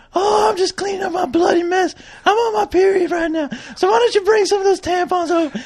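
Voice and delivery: very high-pitched put-on woman voice. Co-host answering the other co-host in a skit, woman voice. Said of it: "woman voice".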